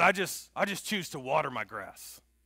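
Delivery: loud, heavily laid-on gruff voice. Retell the legendary coach's words to Rodney as a gruff Coach Meyer impersonation. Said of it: "That's my impersonation of Coach Meyer".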